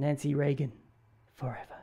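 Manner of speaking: hushed, softly whispered. Speaker joking that a stamp's wording sounds like a fragrance ad, whispered.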